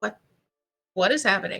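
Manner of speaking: quiet muttering under the breath. Speaking in character amid trouble, quietly under breath. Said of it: "quietly under my breath".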